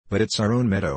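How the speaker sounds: ordinary delivery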